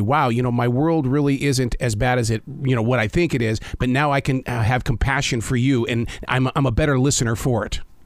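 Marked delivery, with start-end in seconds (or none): none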